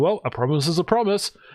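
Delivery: put-on, typical stock Australian accent. Retelling what was said to the stream chat: typical Aussie accent. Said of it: "I started talking like a r-, typical Aussie".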